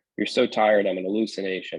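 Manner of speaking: ordinary talk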